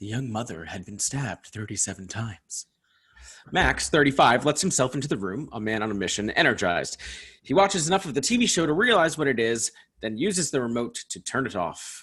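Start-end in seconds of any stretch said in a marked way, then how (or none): 0.0-2.7 eerie, flat monotone, quieter. A TV show narrator reports on a dead woman, eerie monotone. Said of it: "in an eerie monotone".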